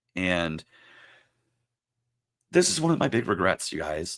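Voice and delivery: choked-up, voice catching with emotion. Talking about a sick friend and a big regret, getting emotional. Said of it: "I'm sorry if I'm getting emotional".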